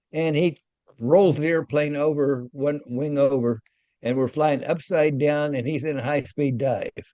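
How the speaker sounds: plain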